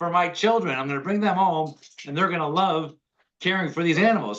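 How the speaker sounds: excited, thrilled voice.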